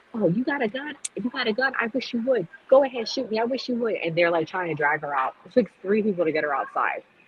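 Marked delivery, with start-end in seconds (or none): 0.1-3.9 woman's high-pitched hollering outburst. Retelling a courtroom outburst, imitating a woman hollering at bailiffs. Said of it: "When she started hollering".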